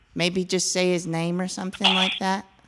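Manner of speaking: put-on high, small young child voice. A caller asking whether their daddy is there; young child voice. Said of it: "New child voice".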